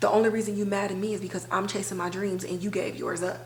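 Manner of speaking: usual speaking voice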